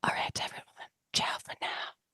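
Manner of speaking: whispered ASMR voice. Saying her usual sign-off at the end, in her asmr voice. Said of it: "in her A S M R uh, voice".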